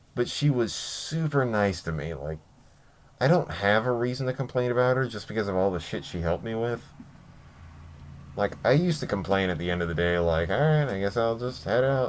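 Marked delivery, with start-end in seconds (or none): 10.5-12.1 glum, sorry-for-oneself, slightly higher voice. Retelling leaving at the end of the day: imitating own past sad voice. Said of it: "you sound so sad about it".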